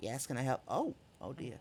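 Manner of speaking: small birdlike creature voice, soft and swooping. Narrating a scene, then voicing a kenku woman answering the door: small crow kenku woman voice. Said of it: "a small little crow kenku woman".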